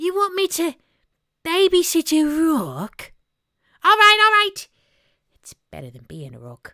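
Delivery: very high, shrill tiny cartoon bat voice. Showing off one of their party trick voices: little bat guy voice. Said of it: "a little bat guy, uh, he's one of my party trick voices".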